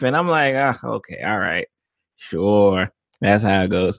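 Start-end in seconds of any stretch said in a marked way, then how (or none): 0.5-2.9 put-on mumbling under breath, lower and slower. Acting out his reaction to shows his wife can't stand: acting out mumbling under breath. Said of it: "I just be mumbling under my breath".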